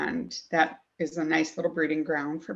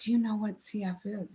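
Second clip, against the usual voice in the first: whispered speech; 5 semitones higher than usual. Retelling being led into a small closet and asked this: imitating someone whispering. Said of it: "started whispering, like".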